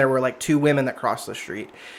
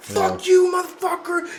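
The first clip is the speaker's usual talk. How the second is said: mock woman's scream, higher. Retelling how a woman in a parking lot screamed at some men: imitating a woman screaming. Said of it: "this lady is screaming at the guys".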